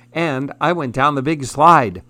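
ordinary delivery

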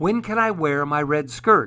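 ordinary delivery

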